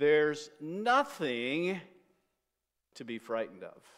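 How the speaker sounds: slow, deliberate delivery with heavy re-emphasis. Quoting an author's book, the speaker repeats the phrase with a slow, emphasized delivery. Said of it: "let's say it again slowly with re-emphasis".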